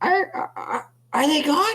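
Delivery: very high, squeaky, stammering little voice. Game master voicing an unseen figure at the doorway, squeaky voice. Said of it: "a voice just kind of squeak out".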